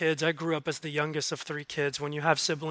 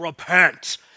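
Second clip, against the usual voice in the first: loud, deep, scary screaming voice. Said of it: "really angry old religious dude screaming".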